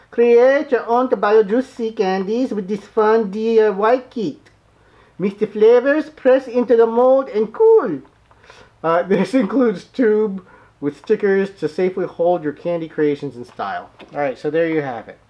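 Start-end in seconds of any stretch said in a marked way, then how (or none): 0.2-13.9 put-on high-pitched old Filipino woman accent. Reading a Japanese candy box's text aloud like an old Filipino woman. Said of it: "I'm reading it like an old Filipino woman".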